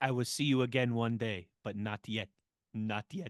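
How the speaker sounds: low, hushed, solemn, final-sounding. Telling someone he sounds like a film scene, then doing the Gladiator farewell impression. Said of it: "You sound like the guy at the end of Gladiator".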